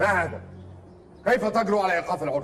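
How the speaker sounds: shouting in anger. In a drama, a character confronts the one who interrupted: angry shouting. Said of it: "لا تصرخ هكذا في وجهي".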